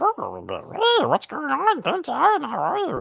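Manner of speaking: very high, very slow, croaky, creaky little creature voice. Showing how Grogu might sound once he starts talking: Grogu voice. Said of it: "And the kid's like this".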